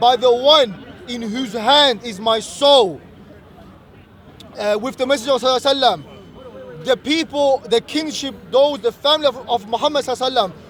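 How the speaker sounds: usual speaking voice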